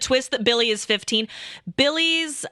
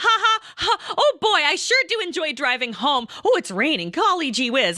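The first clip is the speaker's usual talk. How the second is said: high, overly chipper, forced cheery chatter; 6 semitones higher than usual. Retelling keeping the mood relaxed with Pat on the drive home, forced cheerfulness. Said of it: "trying to like keep the mood relaxed".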